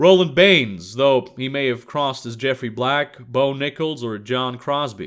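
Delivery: ordinary delivery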